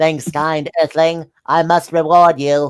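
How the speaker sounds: put-on insect-like alien creature voice. Reading a story aloud, voicing the freed character in a bug voice. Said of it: "I'm just doing like the bug voice".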